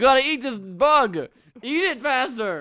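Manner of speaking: very loud, high, drawn-out, slow shouted yell. Retelling how Joe Rogan yelled at contestants: imitating Joe Rogan yelling. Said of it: "He just yells at you".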